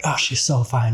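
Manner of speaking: mock over-the-top bro admiration. Retelling trying to prove to straight buddies: imitating own exaggerated straight-guy talk. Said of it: "I'd exaggerate that too".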